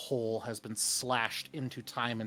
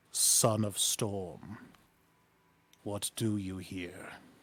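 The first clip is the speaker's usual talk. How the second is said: very slow voice echoing everywhere; 3 semitones lower than usual. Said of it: "a voice that seems to echo from everywhere".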